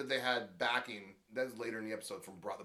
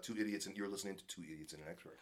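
voice dropped down a notch, low and soft; 3 semitones lower, 7 dB quieter than usual. Announcing the podcast name to listeners: dropped voice. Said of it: "I love when you drop your voice like that".

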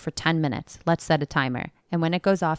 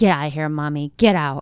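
put-on child's screams, louder; 5 dB louder than usual. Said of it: "he's screaming".

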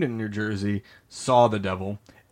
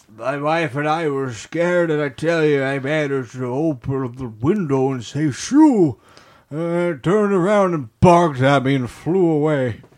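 put-on old man voice, raised and pitched up; 5 semitones higher, 5 dB louder than usual. Retelling the account a man gave you, in a put-on old man voice. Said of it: "I had to give it an old man voice".

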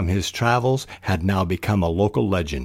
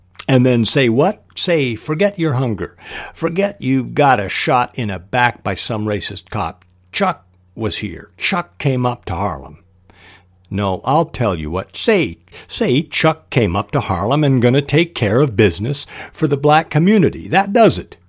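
lively, youthful, energetic, loud, hip delivery; 4 semitones higher, 4 dB louder than usual. Demonstrating a reading voice for sample lines, energetic, young, loud, hip. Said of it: "What's the voice? Energetic, young, loud, hip".

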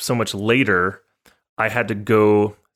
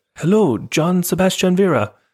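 bad put-on Japanese accent, pitched up; 9 semitones higher than usual. Retelling two Japanese ladies greeting them at the door, in a terrible Japanese accent. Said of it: "that's a terrible accent".

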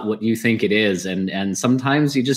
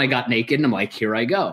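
ordinary talk

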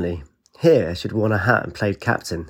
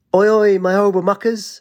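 shrill, very high bellowing call; 10 semitones higher, 3 dB louder than usual. A character calls out to the group from behind; bellowing. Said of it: "Ajax bellowed".

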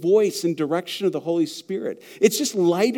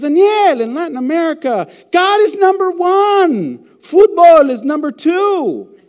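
very high, very loud, drawn-out, slow declaiming voice; 10 semitones higher, 9 dB louder than usual. Retelling what a pastor friend in Argentina said: imitating an Argentine pastor friend. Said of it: "Now watch me. He goes".

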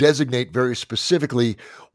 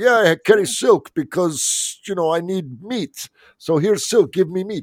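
put-on Russian-sounding accent, pitched up; 6 semitones higher than usual. Speaker acts out a Mongol trading silk, in a Mongol voice sounding Russian. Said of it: "Your Mongol also sounds Russian".

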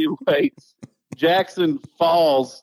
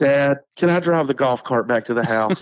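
put-on serious tone. Retelling what the son said afterwards: imitating a serious tone. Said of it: "real serious".

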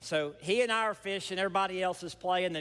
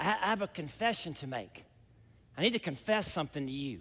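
mock solemn, grave, dead-serious tone; 2 semitones lower than usual. Quoting a campus pastor who came down to the dock, in a retold serious voice. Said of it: "In a real serious voice".

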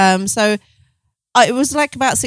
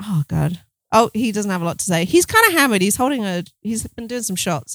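plain

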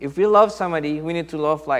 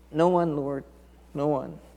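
quavering, unsteady, shaky, trembling voice; 5 dB quieter than usual. Retelling the woman's reply to Jesus, imitating a shaky voice. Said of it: "with your shaky voice".

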